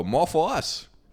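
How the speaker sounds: put-on accent from the Bahamas. Retelling what a coworker said at tables: imitating a coworker's Bahamian voice. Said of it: "Is that what he sounded like?".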